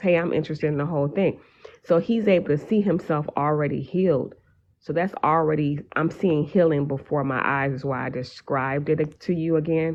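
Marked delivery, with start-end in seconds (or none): 0.0-1.4 quick, rattled off, eager. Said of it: "he was able to say that so fast".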